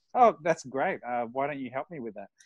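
heavy, thick, sing-song put-on sarcasm. Retelling a reply to someone's emailed suggestion, sarcastically. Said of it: "so sarcastically".

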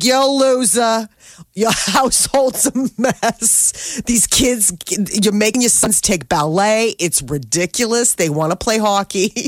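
put-on high, tough East Coast accent. Speaker retells a visiting hockey mom scolding a family, in her East Coast accent. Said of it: "she's got this amazing accent".

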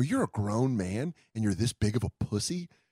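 put-on taunting tone while laughing. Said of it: "laughing, talking shit to him".

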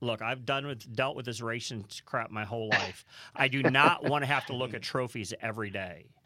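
ordinary talk

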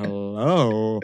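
low, drawn-out, lingering, seductive sultry voice. Mimicking the guest's greeting: imitating a low sexy voice. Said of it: "You're like".

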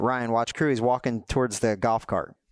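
ordinary talk

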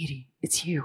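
very gentle, soft, sweet, low voice. Edie recalls Adam calling her name while she shook, imitating Adam softly and sweetly. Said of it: "And you can hear Adam's voice very softly and very".

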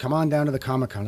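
ordinary delivery

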